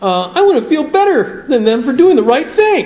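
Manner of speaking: put-on, high, self-pitying woe-is-me voice. Talking about spiritual pride, the speaker acts out a selfish thought in a mock self-pitying voice. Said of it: "in that self-pity voice".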